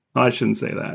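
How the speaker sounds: ordinary delivery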